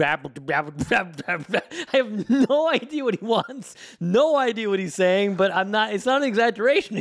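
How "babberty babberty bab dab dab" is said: put-on repetitive babbling baby nonsense syllables. Retelling the sounds a baby son makes all day: imitating baby babbling. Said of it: "This guy is just going".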